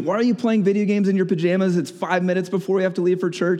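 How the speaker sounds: high-pitched, loud yelling. Describing grumpy Sunday mornings before church, retelling parents yelling at the kids. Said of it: "the parents were yelling at the kids".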